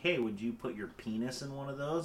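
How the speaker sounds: mock casual, offhand, nonchalant throwaway delivery. Acting out someone asking a question beside fire ant hills: acting nonchalant.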